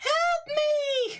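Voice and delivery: very high-pitched wailing cry. A game master voices someone inside the burning inn, wailing cry for help. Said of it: "you hear wailing coming from inside the inn".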